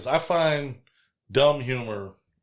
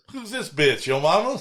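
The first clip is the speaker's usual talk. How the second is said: dead serious and earnest, no joking, higher pitch; 5 semitones higher than usual. Retelling a movie line a tied-up character says, imitating completely serious delivery. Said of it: "he says it with like he's being completely serious".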